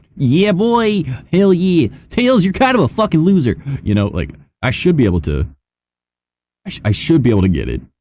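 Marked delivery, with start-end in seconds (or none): 0.2-3.6 cartoon-style voice, pitched way up. Speaker who used to do voice acting shows off his Sonic the Hedgehog voice. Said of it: "Sonic the Hedgehog, like you know I could do that one too".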